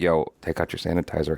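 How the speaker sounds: hushed, low, secretive whisper. Retelling a story, speaker acts out what she told her friend, retelling a whisper. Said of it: "and I whisper to Cannon".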